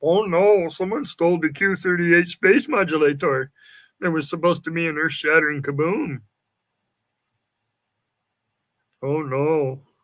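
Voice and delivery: big, loud put-on cartoon alien voice. Showing off a best impersonation: Marvin the Martian voice. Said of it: "My best impersonation is Marvin the Martian".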